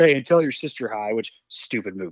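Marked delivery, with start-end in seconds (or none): 0.0-1.1 put-on snippy, curt tone. Retelling a movie scene where a guy answers back: imitating a snippy retort. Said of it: "The guy gets snippy with him".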